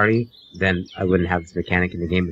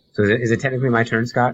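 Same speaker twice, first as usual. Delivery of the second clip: ordinary talk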